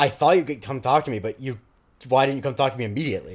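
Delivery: normal talking voice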